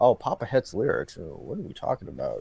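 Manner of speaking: deep, very low, hushed, murmured whisper. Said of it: "the way he talked, it's like he was whispering".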